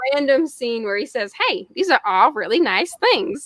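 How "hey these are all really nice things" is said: lousy, clumsy put-on cartoon character voice. Quoting a random Family Guy scene in a Peter Griffin voice. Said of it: "That was the worst Peter Griffin".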